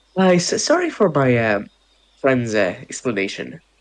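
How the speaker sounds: forced polite tone with a fake smile. Voicing a character stepping between two others: fake polite smile while speaking. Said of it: "smiles, like, a, it's somewhat of a fake smile".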